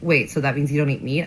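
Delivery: normal talking voice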